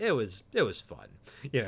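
put-on heavy sarcasm, low, slow, swooping, drawn out. Retelling an actor's remark about bathroom trips while wired up, imitating someone being sarcastic. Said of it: "being sarcastic".

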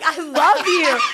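very high-pitched, crying through the words. Retelling a past moment with him, imitating own crying. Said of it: "I'm like crying and I'm like".

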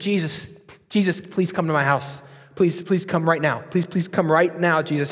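mock urgent, desperate, begging plea. Retelling a desperate father begging Jesus to come: acting out a desperate plea. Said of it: "he's pleading".

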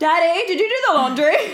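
loud, high-pitched calling out. Imagining a wife calling for her husband, imitating yelling through the house. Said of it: "yelling through the house".

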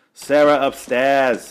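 put-on loud, forced New York accent drifting into Boston. Quoting a movie line in a weird accent: Nicolas Cage's weird movie accent. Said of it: "There's a line where he goes".

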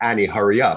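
put-on stern voice. A producer describes being strict on productions: acting stern. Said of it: "if I like sternly say".

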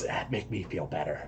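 barely audible, very quiet whisper. Voicing a character sneaking into a building with the group: whispering in character. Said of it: "Thucydides whispers".

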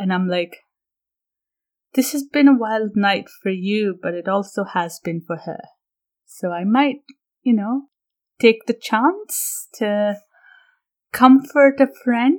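hushed, leaning-in half-whisper. A character leans in to speak so another can't overhear, half-whispering. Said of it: "I lean in and I'm sort of whispering".

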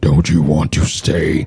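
devilish, very deep, low put-on devil voice. Redoing the line in a devil voice to show the difference: devil voice. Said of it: "I'll do it in the devil voice".

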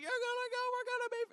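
put-on, very high-pitched, squabbling yell. Retelling arguing with friends in the woods: retelling yelling at friends. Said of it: "we're just yelling at each other".

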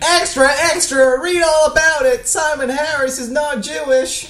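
put-on very high, failed English newsboy accent. Imagining a sooted victorian street child crying out news; bad english accent. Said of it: "that was not an English accent".

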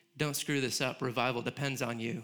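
normal talking voice

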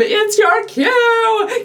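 acted yell, drawn out. Retelling yelling at a kid who missed his cue in rehearsal: retelling a yell. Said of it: "I'm like yelling at him".

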